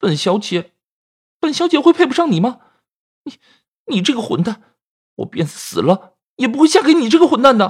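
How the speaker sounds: voice trembling and quavering with anger. Fang Linyun, pointing at Chu Yunhan, answers him in a trembling voice. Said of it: "颤声地说道".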